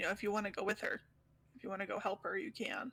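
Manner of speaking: hushed, quiet voice. A player's character speaks to a companion after a visitor leaves, speaking quietly. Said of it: "I'm just gonna say real quietly".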